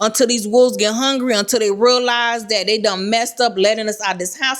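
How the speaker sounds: normal talking voice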